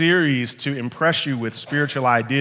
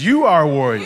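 emphatic, forceful, strongly stressed delivery; 6 dB louder than usual. Leading others to say a line to their neighbor, said with emphasis. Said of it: "Tell him one more time with emphasis".

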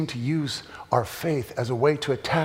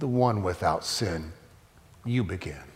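put-on calm voice; 6 semitones lower than usual. Retelling the story of Jesus facing an angry mob, retelling Jesus speaking calmly. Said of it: "in a calm voice".

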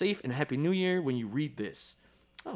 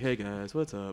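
put-on flat delivery with no energy; 6 semitones lower, 3 dB quieter than usual. Host imitates how they sounded on their first episode, imitating flat low energy. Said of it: "We sound low energy".

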